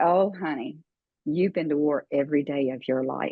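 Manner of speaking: pleasant, nice-sounding put-on Southern accent. Retelling what a therapist said in reply: Southern accent. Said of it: "in her nice Southern accent".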